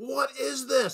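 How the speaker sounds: put-on, loud, very high shout carrying far. Retelling turning around and shouting twenty feet back: retelling a shout across a distance. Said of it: "I turned around and I shouted".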